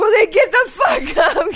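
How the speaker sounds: sudden, very high-pitched, shrill yell. Retelling how the other speaker sat up in bed: imitating someone yelling. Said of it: "sit up in bed and yell at me".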